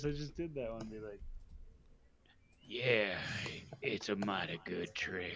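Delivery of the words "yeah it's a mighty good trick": put-on low, haggard beggar voice, close to an old man. Voicing a one-eyed beggar answering the game master: one-eyed beggar voice. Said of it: "my one-eyed beggar voice".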